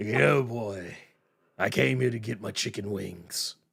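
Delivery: very low, dropped way down, drawn-out delivery. Joking about the villain visiting Earth for food: imitating Galactus. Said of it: "that's what he's like".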